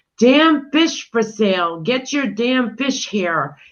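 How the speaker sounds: play-acted boy's voice yelling out like street hawker. Telling a joke, a fish seller calls to customers: imitating a boy yelling. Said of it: "he is yelling".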